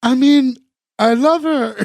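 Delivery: terrible put-on girl voice, high and very slow. Retelling a scene from an episode: imitating a terrible girl voice. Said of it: "his terrible girl voice".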